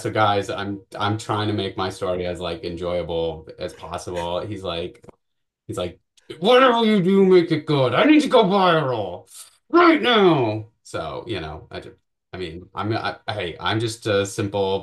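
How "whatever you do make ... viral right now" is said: very high, loud, insistent, demanding yell. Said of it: "he was just yelling at me".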